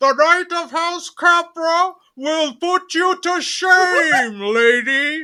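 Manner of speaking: very high voice echoing as if inside a helmet. The armored knight speaks after slamming the visor shut, echoey voice inside a helmet. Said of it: "you just hear it very echoey".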